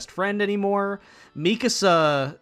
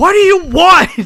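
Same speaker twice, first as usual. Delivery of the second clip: very high, very loud, shrill, booming drawn-out scream; 13 semitones higher, 15 dB louder than usual. Retelling an anime scene, imitating Eren screaming. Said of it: "Eren just screams".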